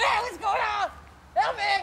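very high, frightened panicking voice. Character in an acted scene crying out, scared and panicking. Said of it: "I'm scared!".

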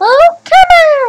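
very high, loud, slow exasperated yell.

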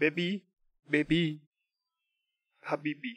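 fake, played-up, put-on Indian accent. Offering the stream chat an accent, then doing it: put-on Indian accent. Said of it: "Do you want me to make Indian accent?".

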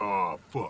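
naturally deep bass-register voice, very low and soft. Showing off a naturally low voice on an exclamation: very low deep voice. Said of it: "as I have a naturally low voice, and I do likes to say".

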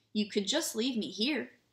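ordinary delivery

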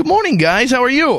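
perky chipper voice. Greeting two guests at the start of an interview: chipper. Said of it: "You sound chipper".

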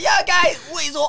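very high, slow, drawn-out put-on Brummie accent. Imitating another speaker's way of talking: imitating a high-pitched Brum accent. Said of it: "imagine that high-pitched voice with that Brum".

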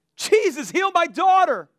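very high, drawn-out, screamed pleading cry. Retelling the story of a woman pleading with jesus, imitating her screaming plea. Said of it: "She's screaming out".

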